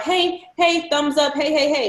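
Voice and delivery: high, drawn-out street calling. Acting out someone stopping every passing car: imitating a street worker hailing cars. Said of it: "She's stopping every car".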